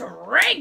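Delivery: hard stress on drink. Retelling what a woman said, with hard stress on 'drink'. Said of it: "She hit that word".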